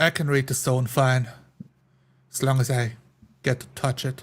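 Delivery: hushed, raspy dwarf voice in a whisper. A dwarf in a dark tunnel quietly tells a companion how he can read the stone as they try to get out. hushed, raspy dwarf voice. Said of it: "keeping my voice hushed with my raspy dwarf sounds. / [name] following the tugs of the rope, standing with his back straight, looking like a hawk, like he always looks, unshifting his demeanor. / [nam".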